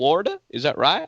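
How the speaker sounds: "Florida" in southern accent. Asking whether people in Florida talk like this, in a Florida Southern accent. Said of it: "They they talk like this?".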